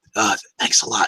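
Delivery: gentle, soft, friendly whisper. Thanking the ship by patting the bulkhead: whispering. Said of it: "I whisper back to, to the ship".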